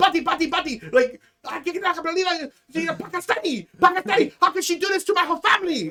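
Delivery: acted-out furious tirade, very high-pitched. Retelling a man losing it on the phone, imitating a furious rant. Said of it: "he is losing his shit on the phone".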